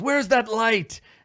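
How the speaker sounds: high, loud yelling. Voicing Bluto after the torches go out: Bluto yelling. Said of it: "Bluto yells".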